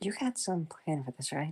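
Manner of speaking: soft, hushed, half-whispered stage whisper. Voicing a character asking Aizawa about a plan: half-whispering. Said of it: "whispers to Aizawa".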